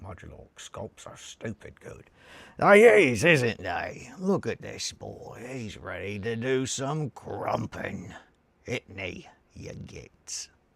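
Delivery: loud, slow, drawn-out put-on orc creature voice. Talking about modular scopes, the speaker slips into his orc voice. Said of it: "I've not been practicing my orc voice".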